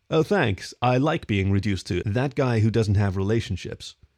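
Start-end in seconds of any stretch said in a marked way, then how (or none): none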